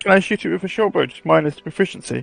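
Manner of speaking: soft, sad, deflated, dejected voice. Asking the game master about an attack, sounding sad. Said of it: "You sound so sad".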